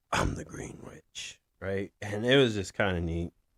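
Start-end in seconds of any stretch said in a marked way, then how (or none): 0.1-1.4 low, gravelly, strange whispered voice. Retelling a character announcing herself as the Green Witch, Batman voice. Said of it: "she did it in a weird voice, like like Batman".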